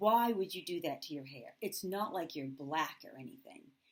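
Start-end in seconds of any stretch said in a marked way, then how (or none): none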